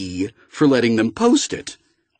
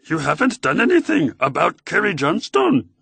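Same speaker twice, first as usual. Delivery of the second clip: high-pitched, computer-flat synthetic male voice; 6 semitones higher than usual. Narrator reads a second voice's line on a phone call, in a Yoda-like voice. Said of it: "sounded like Yoda".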